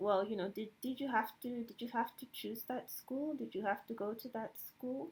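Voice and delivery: imitated Nigerian accent. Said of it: "I don't have the best Nigerian accent".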